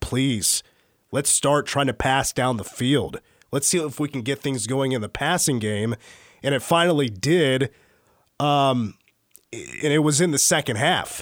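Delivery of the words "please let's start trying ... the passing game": normal talking voice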